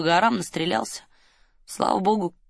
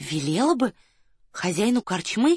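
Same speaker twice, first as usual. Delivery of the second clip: fearful, unsure, slow and timid; 3 semitones higher than usual. Narrator voicing Varya as she questions her companion: timid question. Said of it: "боязливо спросила Варя".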